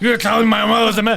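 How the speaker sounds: loud, high-pitched, dumbfounded stunned outburst. Retelling a movie scene, mocking the hero's reaction: imitating Batman dumbfounded. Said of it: "He looks super mental when he's saying it".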